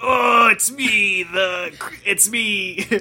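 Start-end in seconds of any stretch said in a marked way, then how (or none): 0.0-1.2 slow, shouted, booming showman critic voice. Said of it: "Roger Slimebert, the Monster Girl critic".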